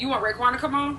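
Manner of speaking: plain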